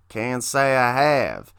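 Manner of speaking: talking like a cowboy. Retelling a scene, a character answers another character's question in Razorus cowboy voice. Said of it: "that's my great cowboy impression".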